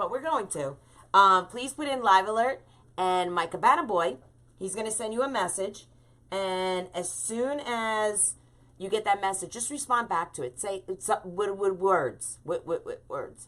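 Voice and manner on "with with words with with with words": stammering, stuttering over words. Explaining to viewers how to reply to a bot message: stuttering. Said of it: "I'm stuttering here".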